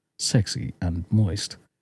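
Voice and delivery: put-on low, husky radio advert announcer voice. Practicing a radio voice for doing adverts, husky radio voice. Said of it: "practicing my radio voice".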